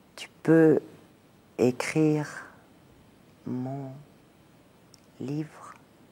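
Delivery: very slow, halting, word by word with breaks. Retelling what a woman said to her while looking at her, very slowly. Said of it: "elle m'a dit très lentement".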